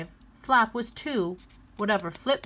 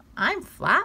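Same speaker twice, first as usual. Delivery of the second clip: high, grinning, smiling delivery; 9 semitones higher, 3 dB louder than usual. Flop answers the little bear Hop, grinning.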